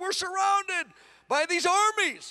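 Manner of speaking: high, slow, frightened, pleading voice.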